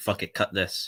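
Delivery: ordinary talk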